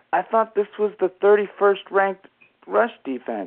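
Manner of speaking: acted, very confused broadcaster voice. Retelling a broadcaster's reaction when his team goes up early, in a mock-confused tone. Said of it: "he goes in this very confused tone of voice".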